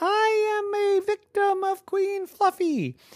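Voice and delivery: squeaky porcupine voice, pitched way up. Narrator reading a story, Victoria answers the troll in her squeakiest porcupine voice. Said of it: "in her squeakiest porcupine voice".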